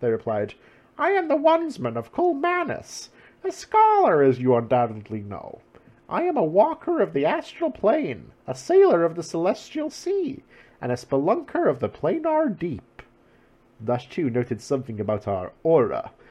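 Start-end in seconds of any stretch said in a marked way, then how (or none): 1.0-13.0 put-on very high, swooping bird boy voice. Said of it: "full bird boy voice".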